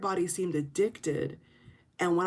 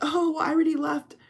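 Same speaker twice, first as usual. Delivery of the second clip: talking with a light chuckle throughout; 9 semitones higher, 4 dB louder than usual. Imitating influencers who say they already left: imitating someone chuckling.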